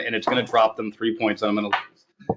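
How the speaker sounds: ordinary delivery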